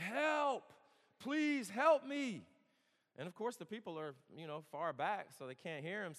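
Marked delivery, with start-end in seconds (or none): 0.0-2.4 put-on very slow, drawn-out, loud, high scream. Telling a story where a man faces an approaching lion, mock screaming for help. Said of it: "He starts screaming".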